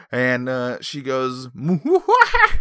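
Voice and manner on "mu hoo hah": very high-pitched put-on witch laugh. Telling a story, the speaker voices the witch: witch voice. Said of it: "That's my witch".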